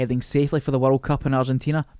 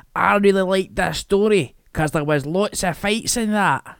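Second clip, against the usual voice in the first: put-on dramatic, played-up West of Scotland teenager accent; 4 semitones higher than usual. A teacher addressing his students breaks into a dramatic impersonation of a West of Scotland teenager. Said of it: "a dramatic impersonation of a West of Scotland teenager".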